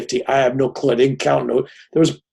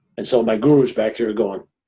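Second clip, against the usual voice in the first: ordinary delivery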